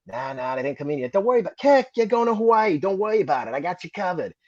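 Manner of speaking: put-on Boston accent. Retelling what Top told him when he asked about his orders, Top's Boston accent. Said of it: "He had that Boston accent".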